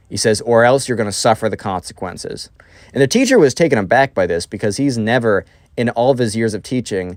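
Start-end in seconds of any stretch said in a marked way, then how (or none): none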